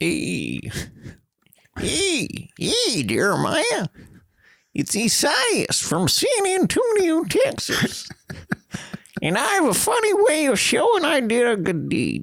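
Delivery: slow, swooping, put-on old prospector drawl. Host reads a listener's letter in an imagined voice: old prospector voice as Esaias. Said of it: "read their letter in the voice I thought that he might have".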